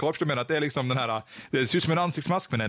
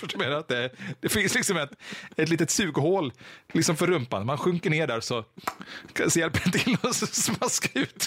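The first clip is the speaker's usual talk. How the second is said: words spoken while laughing; 3 semitones higher than usual. Describing an imagined bathtub toilet, laughing while talking. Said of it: "Förlåt att jag skrattar".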